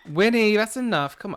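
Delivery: very high, shrill, loud scream. At the microphone, the speaker screams at their dog winnie, screaming. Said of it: "I'm screaming into the microphone".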